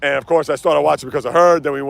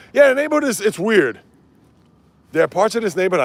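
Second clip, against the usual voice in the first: loud, high-pitched yelling like a lunatic; 5 semitones higher than usual. Describing the neighborhood while answering comments: yelling like a lunatic. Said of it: "I know I'm yelling here like a lunatic".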